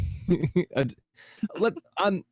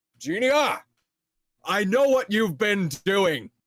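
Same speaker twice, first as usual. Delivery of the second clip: raised, loud, carrying, pitched-up voice; 6 semitones higher than usual. Narrating Clay walking to the middle of the room to address Genia, loud voice. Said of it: "in a loud voice".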